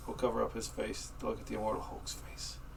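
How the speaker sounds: soft whisper into the mic.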